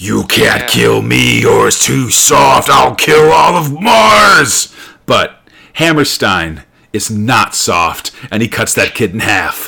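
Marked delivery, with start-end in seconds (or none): 0.0-4.7 put-on rough, creaky possessed child voice, "Mars" drawn out. Retelling a comic scene where a child threatens the hero: Linda Blair exorcist voice. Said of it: "goes full Linda Blair exorcist on him".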